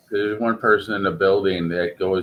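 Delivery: ordinary delivery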